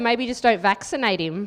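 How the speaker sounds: ordinary talk, nothing marked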